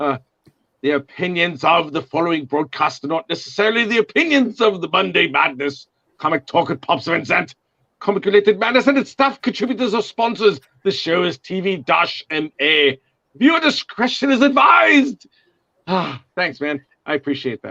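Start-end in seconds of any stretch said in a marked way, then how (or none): 0.8-15.3 sultry, sexy put-on British accent, pitched up. Reading the show's disclaimer aloud in a sexy British voice. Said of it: "my sexy British voice".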